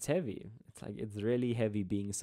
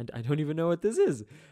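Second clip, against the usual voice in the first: high, loud, fast mock confusion. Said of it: "No, I'm joking".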